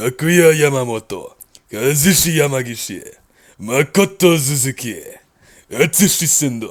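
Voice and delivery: screaming in a deep anime voice. Reading out fighters' names for a ranking, screaming names in deep anime voice. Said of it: "I'm not gonna scream every character's name like that".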